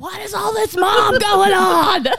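yelling high and slow, laughing.

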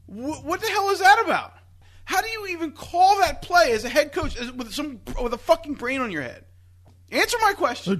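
loud yelling rant at full volume. Ranting about a head coach's play call after a sack, yelling. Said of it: "Why are you not Stop I, yelling?".

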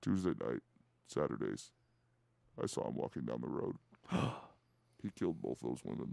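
breathy, obscured, disguised whispered voice. Playing the obscured guy from a true crime investigation: obscured true-crime guy voice. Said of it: "you sound like... the obscured guy in every fucking true crime investigation".

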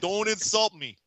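forties wise-guy talk. Asking who is talking on the call: Mike Babcock voice, 1940s wise guy. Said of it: "talks like a wise guy from the forties".

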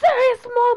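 put-on high, loud, angry yelling in child voices. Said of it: "they're like".

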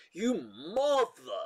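acted angry swearing, high, heated, full of emphasis. Retelling a viral clip of a woman swearing in a supermarket: imitating her swearing delivery. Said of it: "the way she says it with so much".

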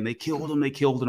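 mock urgent hollering, words tumbling out fast. Retelling the phone call from their mom, imitating her hollering. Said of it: "she's hollering saying".

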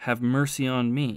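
ordinary delivery

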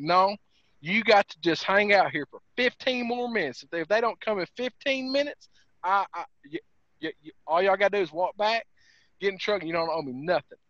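ordinary talk

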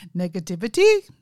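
put-on loud, rising, negative tone in Indian accent. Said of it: "he said it just like that".

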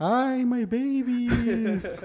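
very high wailing cry, "babies" stretched out. Asked how La Llorona would say it in English, answer in a La Llorona voice. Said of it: "cómo dice en inglés, güey, la llorona".

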